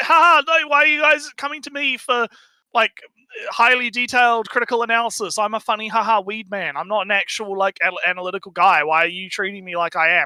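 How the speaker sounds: play-acted sarcastic, mocking, dismissive tone. Mocking how someone hides behind a joke persona: mocking imitation of another creator. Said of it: "He's like".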